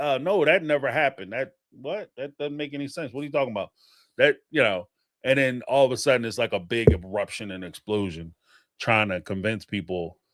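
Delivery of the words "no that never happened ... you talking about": plain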